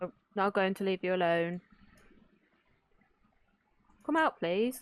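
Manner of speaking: threatening, menacing, ominous tone. A character urges someone hiding to come out: threatening. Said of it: "That's so threatening".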